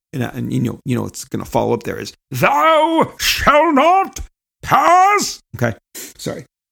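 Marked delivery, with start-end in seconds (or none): 2.3-5.4 strained, very high, very slow, "thou" stretched out. Finishing the joke with a famous line: constipated Gandalf voice. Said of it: "Little constipated version of, uh, of Gandalf".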